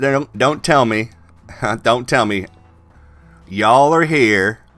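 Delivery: put-on thick Alabama accent. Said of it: "He's got a thick Alabama accent".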